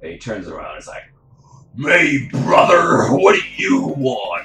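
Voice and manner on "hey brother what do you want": loud, slow, booming wrestler-style voice. Playing a guy who turns around when followed into an alley, in a Hulk Hogan voice. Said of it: "it's Hulk Hogan".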